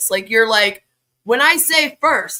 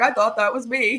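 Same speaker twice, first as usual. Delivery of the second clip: mock-sad voice, slower. Imagining a marketing guru's reaction to the video, in a mock-sad voice. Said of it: "He's going to watch this and get sad".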